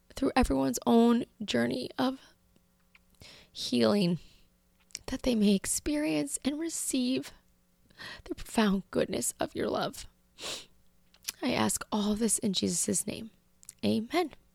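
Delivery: tearful, emotional voice, speaking through tears. Finishing a spoken prayer before signing off: tearful, emotional praying. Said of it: "I apologize for the tears".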